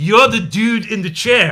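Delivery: put-on slow, deliberate, drawn-out Scottish accent. Quoting a character from the movie Trainspotting: Scottish accent. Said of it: "with the Scottish accent".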